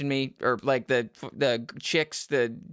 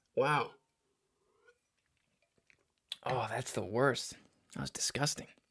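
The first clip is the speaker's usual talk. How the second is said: quiet, nauseated, sickly, queasy tone; 2 semitones lower, 8 dB quieter than usual. Speaker apologizing to listeners after throwing up in their mouth, queasy. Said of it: "I just burped and threw up in my mouth".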